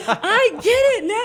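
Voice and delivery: slow, thrilled, drawn-out exclamation. Retelling how he jumped up and threw his notebook down, imitating someone excited. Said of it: "he's all excited".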